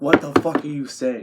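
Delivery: plain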